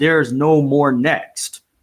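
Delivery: play-acted big booming voice, very slow. Retelling the principal breaking up students around you on a school visit, booming voice. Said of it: "I hear this booming voice that says".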